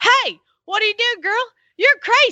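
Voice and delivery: put-on high, loud hollered heckle. Speaker quotes a friend yelling from a car window at a woman: retelling a friend's yell. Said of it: "turned around and yelled at her like".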